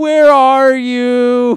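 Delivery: high, loud, very slow nasally voice.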